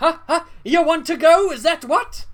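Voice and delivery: very loud, high, goading, taunting voice. Voicing an NPC who raises his fists in fake fisticuffs: picking a fight. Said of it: "fake fisticuffs".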